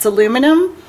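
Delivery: normal talking voice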